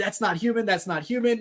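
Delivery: acted-out mild yell, played down, said twice. Recalling a video of a man on a call with a dispatcher, imitating someone screaming. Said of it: "he's screaming".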